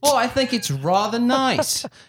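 put-on English accent, very high and slow. Quoting someone's reply about the music, in an imitated English accent. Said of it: "I think I just tried to do an English accent".

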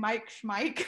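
plain

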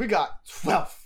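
breathy huff-and-puff delivery. Retelling a scene, imitating Kumi huffing and puffing. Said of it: "was a good Kumi impression".

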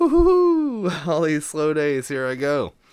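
loud, swooping excited cheer, woohoo drawn out. Retelling getting a ride heading to Ohio, acting out being stoked. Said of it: "right away I was stoked".

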